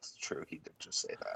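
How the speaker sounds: very quiet whisper under the breath, hushed. In a role-play scene, a player's character looks over at the captain, said very quietly. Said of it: "very quietly look over at the captain".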